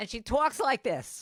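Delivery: put-on fabulous New York accent.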